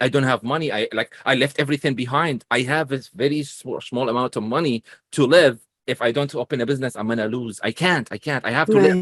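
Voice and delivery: ordinary talk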